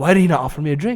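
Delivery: normal talking voice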